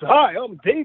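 high, fake TV broadcaster announcer voice. Showing the voice people put on for broadcasting: put-on broadcaster voice. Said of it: "try not to do is get that voice".

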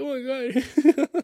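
acted out very high, tearful, weepy choking cry. Retelling own reaction to an emotional movie story: imitating own past crying. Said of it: "I'm fucking crying".

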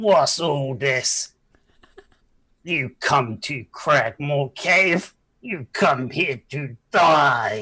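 slow goblin boss voice, "die" drawn out. Voicing a goblin who confronts the party in a cave: goblin voice. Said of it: "you see a slightly larger, slightly better armored goblin head round, and say".

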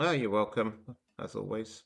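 low, flat, bored, unenthusiastic delivery. Answering a thank-you at the end of the podcast: unenthusiastic. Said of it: "You sound so thrilled to be here every week".

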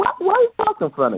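very high, fast, puzzled interviewer voice. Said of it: "and they would go".

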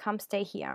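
normal talking voice

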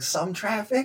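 playful joking tone. Retelling a chat with a neighbor, retelling a joking reply. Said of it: "I jokingly said back".

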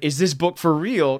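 ordinary delivery

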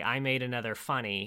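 normal talking voice

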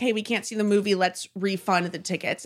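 ordinary talk

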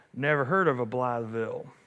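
distinctive put-on northern Arkansas accent. Retelling a man's grinning reply to you, in his northern Arkansas accent. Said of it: "in his very distinctive northern Arkansasian accent".

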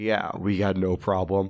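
put-on loaded, slow, drawn-out jerk voice. Retelling a scene where Joel answers his brother: imitating Joel's asshole voice. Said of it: "I love the asshole voice thing".

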